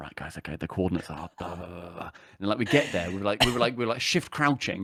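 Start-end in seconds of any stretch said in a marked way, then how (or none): 0.0-2.1 low, soft whisper. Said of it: "whispering to my headset mic".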